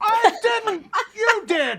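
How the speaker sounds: shouting. Arguing with another speaker over an ordered amount of milk: yelling. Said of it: "Why are you yelling at me?".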